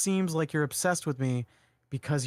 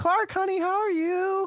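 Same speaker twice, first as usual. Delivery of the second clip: mock high, slow, drawn-out yell; 4 dB louder than usual. Retelling how the Kents call Clark on the smartphone: imitating the Kents yelling at a phone. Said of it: "they're yelling at the phone".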